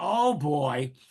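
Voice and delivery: ordinary talk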